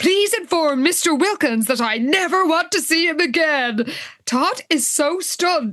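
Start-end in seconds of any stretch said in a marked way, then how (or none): 0.0-3.9 put-on grand public announcement voice, higher. Retelling how Liz speaks over the intercom: Liz addressing the nation. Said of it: "Liz is, like, addressing the nation".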